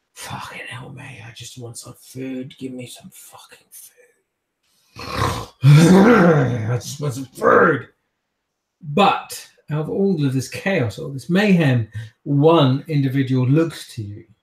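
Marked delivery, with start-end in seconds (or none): 0.2-7.9 muttered grumbling whisper. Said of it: "another kindred just goes".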